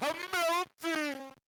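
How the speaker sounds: wailing upward. Describing a character reacting to cold rain, crying to the sky. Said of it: "he's crying to the sky".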